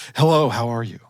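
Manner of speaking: put-on seductive, sexy voice. Reading out a scammer's text messages, pretending to be a woman: put-on sexy voice. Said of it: "I have to put on my sexy voice".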